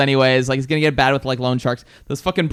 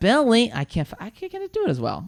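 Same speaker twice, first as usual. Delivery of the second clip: knowingly bad impersonation, high-pitched, swooping voice; 8 semitones higher, 4 dB quieter than usual. Quoting lines from a film's money scene: Rosie Perez impression. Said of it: "I know it's bad".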